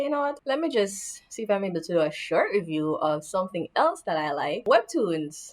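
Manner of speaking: plain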